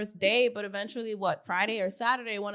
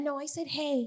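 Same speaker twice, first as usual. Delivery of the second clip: gentle, very soft-spoken, quiet voice; 5 semitones higher, 4 dB quieter than usual. Retelling how a delivery guy spoke when he came up to the speaker, imitating a soft-spoken man. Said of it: "Very soft spoken".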